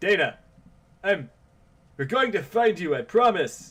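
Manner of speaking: terrible amateurish acted delivery. Voicing a character promising to find someone, in terrible voice acting. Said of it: "sorry for that terrible, semi possibly terrible voice acting".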